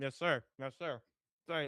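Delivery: talking while chewing. Answering the other speaker as game three starts, talking with mouth full. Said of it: "there's cheese and bread in my mouth".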